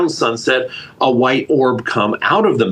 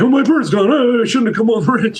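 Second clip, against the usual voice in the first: very high, frantic, panicked fretting; 10 semitones higher than usual. Retelling how a buddy reacted when his falcon vanished: imitating a friend freaking out. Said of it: "he started freaking out".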